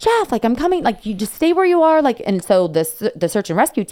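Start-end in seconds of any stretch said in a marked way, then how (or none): 0.0-2.0 mock very high, climbing, rising yell. Retelling calling down a mountain to a fallen friend: imitating screaming at someone. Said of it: "I started screaming at him".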